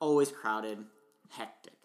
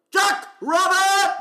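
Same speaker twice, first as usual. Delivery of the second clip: full-lung scream, very high and very loud; 10 dB louder than usual. Retelling a stranger suddenly screaming a phrase, retelling a yell at full lungs. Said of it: "He just yells".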